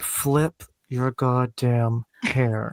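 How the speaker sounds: hushed, soft, very slow delivery. Show the others your own version of a memorable line, as a Lucy Liu impression. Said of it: "I'll do my best Lucy Liu".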